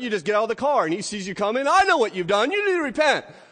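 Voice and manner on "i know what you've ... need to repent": put-on loud, high-pitched shout. Imitating John in a river, shouting at a passing driver: imitating John shouting. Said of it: "he's shouting".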